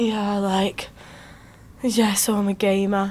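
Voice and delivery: put-on spaced-out, sleepy, flat, slow stoner drawl. Retelling what a flatmate said on move-in: imitating a sleep-deprived stoner. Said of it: "he's giving, like, stoner, sleep deprived".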